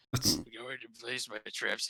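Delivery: slow, drawn-out, dim-witted, dopey voice. Praising how he does the voices, imitating his dim-witted Trapper voice. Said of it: "he makes Trapper sound like a fucking moron".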